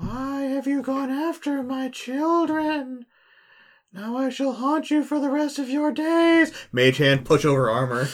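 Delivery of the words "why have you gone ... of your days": very high-pitched, spooky, haunting ghost voice. Casting Ghost Sound to frighten a hobgoblin: ghostly haunting voice. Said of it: "I cast Ghost Sound in the room".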